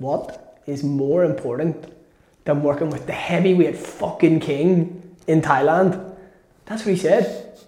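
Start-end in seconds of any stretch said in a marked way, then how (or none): none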